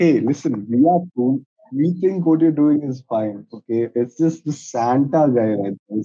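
plain

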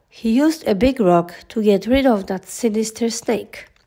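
usual speaking voice

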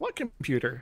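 soft, very perky robot voice. Narrating a scene, voicing the robot answering a woman's question, very perky robot voice. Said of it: "in a very, very perky voice".

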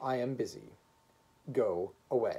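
ordinary delivery

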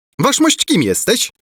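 high, shrill, defiant tone. Prince Bulbo challenges the other man, asking defiantly. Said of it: "Zapytał wyzywająco książę Bulbo".

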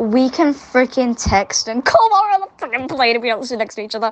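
fast, furious, fed-up acted-out angry outburst. Ranting about texting and calling while not seated together on a plane, angry. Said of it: "I got so mad then".

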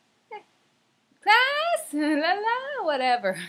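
very high, slow, loud, drawn-out projected call. Showing how they call a class to attention: high-pitched voice. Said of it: "the pitch of my boi-, voice goes high".

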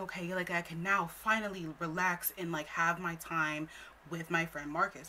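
plain

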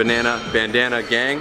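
normal talking voice

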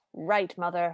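mock-conspiratorial, put-on manner. Retelling a scene where Red answers the stepmother, mock-conspiratorial. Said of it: "very conspiratorially".

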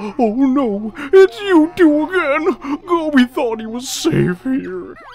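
high, loud, slow, dismayed camel-like wail.

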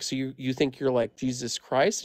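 ordinary talk, nothing marked

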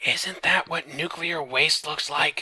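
stage whisper. Narrating the scene, read Marco's question in a loud whisper. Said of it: "Marco asked in a loud whisper".

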